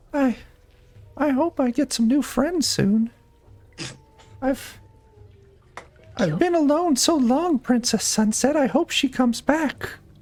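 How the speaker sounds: tiny, very high little voice. A narrator voices someone heard speaking through a door, in a small voice. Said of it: "you hear a small voice".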